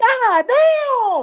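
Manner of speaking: squeaky, very high-pitched voice. Retelling how Jeb hit his head on the car roof, in Jeb's high squeaky voice. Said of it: "in that high squeaky voice he does".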